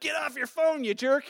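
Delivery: mock yelled put-down. Retelling how a driver yelled at him: imitating a woman yelling. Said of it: "she yells out".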